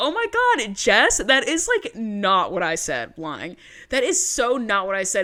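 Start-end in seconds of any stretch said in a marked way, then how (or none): none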